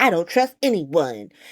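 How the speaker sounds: put-on low-pitched, childish little-kid whine. Recounting a group argument, mimicking what Britt said, mock-childish Britt imitation. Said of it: "Britt does some little childish".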